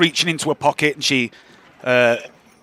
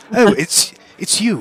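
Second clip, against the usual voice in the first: higher, prim and proper shopkeeper voice; 7 semitones higher than usual. Voicing the shopkeeper as players enter her shop: prim and proper Lady Roth voice. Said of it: "really prim and proper".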